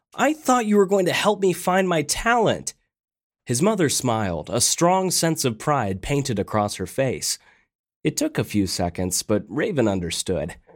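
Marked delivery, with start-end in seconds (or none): 0.2-2.7 exasperated, fed-up, frustrated tone, higher pitch. Narrator reads Raven speaking to his mother, frustrated. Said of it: "Frustrated, Raven finally said".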